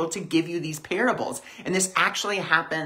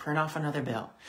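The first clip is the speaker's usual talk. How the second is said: very quiet, soft, hushed, effortless murmur; 7 dB quieter than usual. Describing an inner prompt, quoting it in a very quiet voice. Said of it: "just that very quiet voice".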